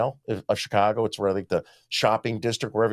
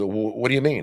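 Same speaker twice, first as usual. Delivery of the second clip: put-on snippy, attitude-filled tone. Retelling a police officer's reply to a question, imitating someone with an attitude. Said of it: "with an attitude".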